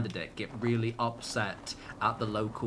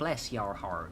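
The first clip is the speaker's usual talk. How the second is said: terrible, put-on American accent; 2 semitones lower, 3 dB quieter than usual. Speaker says a phrase they know in a terrible American accent. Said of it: "That's my terrible American accent".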